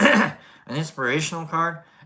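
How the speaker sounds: voice breaking and cracking on the words. Speaker presents an inspirational card, voice cracking. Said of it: "I'm like cracking my voice here".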